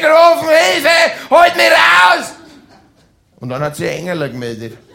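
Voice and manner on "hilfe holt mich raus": very high-pitched, loud screaming. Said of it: "Ich hab zum Schreien angefangen".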